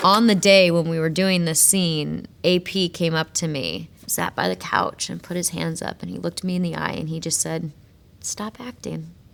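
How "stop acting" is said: very quiet, kind and compassionate, acted. Retelling an AP's note to stop acting: imitating a kind, gentle tone. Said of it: "in a really kind, compassionate, gentle way".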